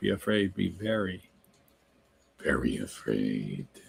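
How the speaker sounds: silly, very low, creaky, spooky scary voice. Answering someone who says they're scary, using a voice from an old movie: silly scary voice. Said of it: "I don't want to tell you where I got that voice from".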